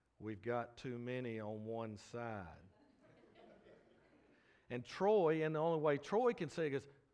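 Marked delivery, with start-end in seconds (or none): 0.2-2.5 slow, soft, drawn-out Western North Carolina drawl. Retelling what Joel said, in Joel's Western North Carolina drawl. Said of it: "in that Western North Carolina drawl he has".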